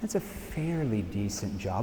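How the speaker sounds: skeptical, doubtful, unconvinced delivery. Showing how tone seeds doubt about a career: doubtful, unconvinced tone. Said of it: "What did I just seed with my tone? Doubt. You see how my tone influences her?".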